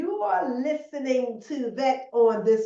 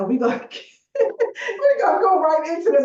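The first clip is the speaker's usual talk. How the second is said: talking through laughter, higher and louder; 4 semitones higher, 6 dB louder than usual. Starting the interview with a guest and apologizing: laughing while talking. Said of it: "I'm sorry, I'm laughing already".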